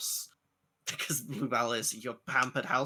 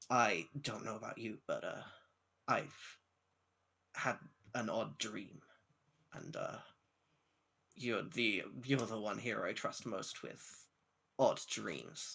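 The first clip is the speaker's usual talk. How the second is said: slow, deliberate, drawn-out, unhurried character voice; 7 dB quieter than usual. Voicing Dusk telling another character about an odd dream: Dusk character voice. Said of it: "I've gotta get into the voice".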